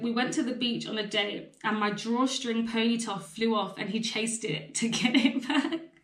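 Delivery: ordinary delivery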